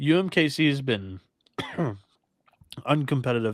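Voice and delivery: choked, struggling, forced-out delivery. Giving a pick on a game, the speaker chokes mid-sentence: choking while talking. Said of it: "Sorry, I'm choking".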